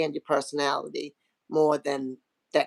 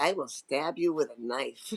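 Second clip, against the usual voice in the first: put-on mutter under the breath, quieter; 5 dB quieter than usual. Retelling a reply to someone being a smart aleck: imitating muttering under breath. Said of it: "I will mutter underneath my breath".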